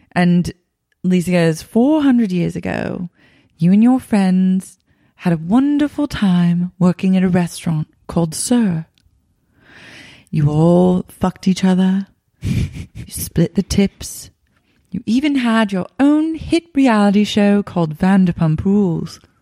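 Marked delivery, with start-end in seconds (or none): 1.6-19.1 put-on British accent. Continuing the acted scene as Lisa explaining: Lisa Vanderpump British accent.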